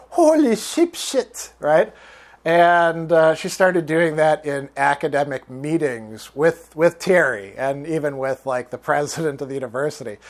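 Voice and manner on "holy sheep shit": put-on light French accent in a very high voice. Telling how a woman misused an American expression in meetings: imitating Cecile's French accent. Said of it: "with her little French accent".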